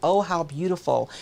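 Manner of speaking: ordinary talk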